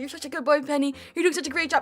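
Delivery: put-on condescending, patronizing, talking-down voice. Imitating chat praising the speaker, imitating patronizing praise. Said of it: "You're like".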